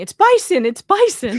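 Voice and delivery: high-pitched shriek at full volume. Retelling spotting cattle on a drive: imitating own past screaming. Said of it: "of course I'm screaming".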